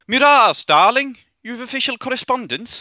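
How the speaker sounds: very high, ringing called-out shout. A woman with a letter turns to call someone inside the temple; shouting into the temple. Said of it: "she turns and shouts into the temple".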